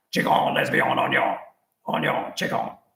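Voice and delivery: put-on Cajun accent. Getting on the phone as family pass it around for a birthday, in a Cajun accent. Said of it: "I started talking in this Cajun accent".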